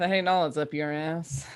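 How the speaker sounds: very low, quiet grumbling under the breath. Playing a character reacting to a butler remark: muttering under breath. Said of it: "mutter under her breath".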